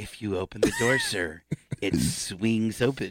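patronizing, condescending sing-song tone. Retelling what a woman said back to him, mocking her patronizing tone. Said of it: "real patronizing".

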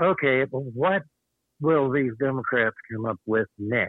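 normal talking voice

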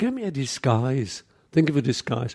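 plain

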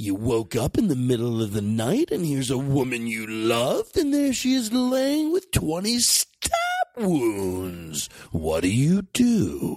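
dramatic, swooping murder-mystery narrator voice. Posing a grim hypothetical, the speaker uses a murder-mystery narrator voice. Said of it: "he can't do that voice. That's a voice of a guy reading a murder mystery".

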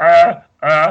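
very loud, high-pitched, failed attempt at roaring. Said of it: "he sounds like Pee Wee Herman".

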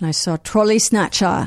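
put-on British accent. Saying a band's name the right way, not with an American accent: put-on British accent. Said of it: "You've done like five great British accents".

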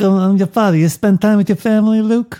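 put-on mafia don voice. Riffing on iconic movie lines with others, in a Godfather voice. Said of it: "but in Godfather voices".

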